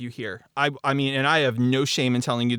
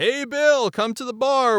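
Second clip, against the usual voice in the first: mock very high called-out yelling; 10 semitones higher than usual. Retelling how a voice line should have sounded: imitating someone yelling. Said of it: "like he was yelling".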